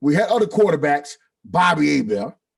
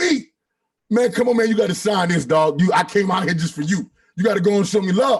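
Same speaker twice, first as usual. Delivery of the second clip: acted-out shouting; 3 semitones higher than usual. Retelling begging a player to sign as he walked away, retelling a yell. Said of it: "I'm yelling".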